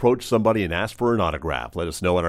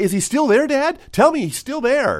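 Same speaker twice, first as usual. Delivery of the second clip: very high, shrill, excited shriek; 14 semitones higher, 4 dB louder than usual. Retelling how she screamed at the speaker's dad from the waterbed, imitating someone screaming. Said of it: "screaming at my dad".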